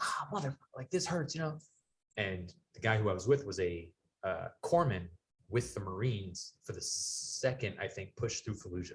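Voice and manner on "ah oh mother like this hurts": high, pained cry. Recalling twisting his ankle and hitting the ground, retelling a pained yell. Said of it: "I'm like yelling because my ankle hurts".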